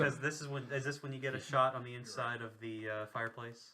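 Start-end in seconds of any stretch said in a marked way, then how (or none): none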